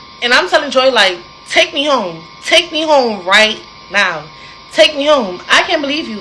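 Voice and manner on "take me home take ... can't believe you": sobbing, crying, desperate tearful begging. Recounting an argument, acting out one's own crying plea. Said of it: "So I start crying".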